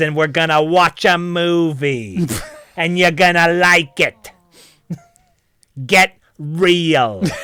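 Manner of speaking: strong emphasis on every single word. Acting out how they would say it, emphasizing every word. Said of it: "I would emphasize all of my words".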